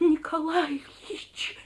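urgent, loud stage whisper, pitched very high. Alyosha calls to Nikolai Ilyich as Belyaev points at him; loud whisper. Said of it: "громко зашептал он".

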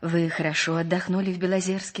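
ordinary delivery

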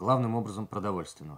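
ordinary delivery

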